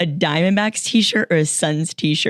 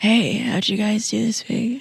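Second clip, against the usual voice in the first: fake sexy voice that sounds sick; 4 semitones higher than usual. Joining a sick co-host by faking her voice: put-on sexy sick voice. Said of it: "the rest of us should do sexy sick voice".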